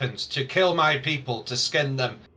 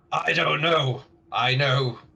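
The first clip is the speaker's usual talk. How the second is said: orc voice, much slower. Voicing an orc being questioned, in an orc voice. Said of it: "that's a better orc voice".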